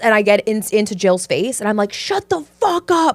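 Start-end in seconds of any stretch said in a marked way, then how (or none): 1.9-3.2 put-on very high drill-instructor scream, barked. Retelling a scene playing a boot camp Pilates instructor: imitating a screaming instructor. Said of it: "I'm screaming at them".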